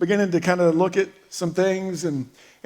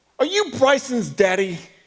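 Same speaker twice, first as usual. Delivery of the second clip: put-on high-pitched small boy's kid voice; 5 semitones higher than usual. A dad retelling what a little boy asked him, in a little kid voice. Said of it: "he's talking in his little kid voice".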